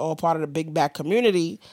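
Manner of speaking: usual speaking voice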